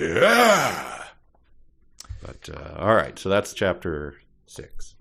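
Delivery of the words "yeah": roaring "yeah", stretched out long. Showing how Al Pacino could roar a yeah: Al Pacino roaring yeah. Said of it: "Al Pacino could roar a yeah".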